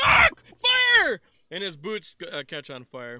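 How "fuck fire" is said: panicked screaming in character voice. Voicing a character whose boots catch fire: screaming in character. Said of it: "He starts screaming, like".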